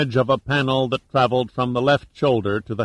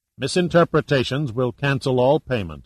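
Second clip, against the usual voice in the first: plain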